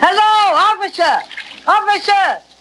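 booming high yell. Character takes over calling to a policeman who doesn't hear, yelling in a big voice. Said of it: "Let me do the yelling".

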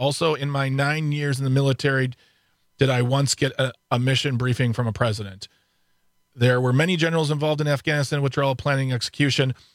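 plain

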